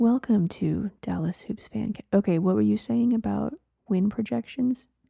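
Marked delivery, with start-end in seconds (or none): 0.0-1.9 calm public radio presenter tone. A podcast co-host jokingly opens the show in an NPR radio host voice. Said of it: "we should do like the NPR people".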